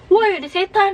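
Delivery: panicked shout, high and loud.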